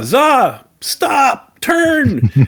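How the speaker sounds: play-acted shouting, very high-pitched, pitched way up. Describing a plan in the game, the speaker acts out Lucas yelling at Za: retelling a yell. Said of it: "like yells at Za".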